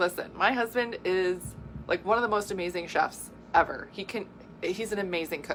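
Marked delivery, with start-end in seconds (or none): none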